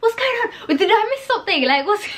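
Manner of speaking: high, baffled shout with a laugh. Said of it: "We were shouting at the T V".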